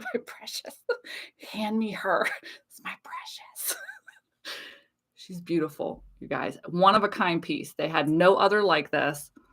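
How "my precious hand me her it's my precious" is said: whispered, greedy, grasping creature voice. Telling of a woman picking up her one-of-a-kind piece, speaker claims it: Gollum voice. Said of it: "I immediately turn into Gollum".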